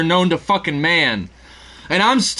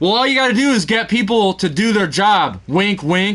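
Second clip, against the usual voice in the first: mock, pointed, knowing wink-wink delivery. Retelling a manager's remark said loud enough for everyone to hear: imitating a loud, pointed remark. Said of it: "he purposely said it loud enough for everybody".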